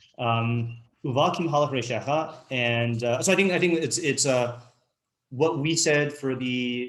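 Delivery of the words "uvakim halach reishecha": ordinary talk, nothing marked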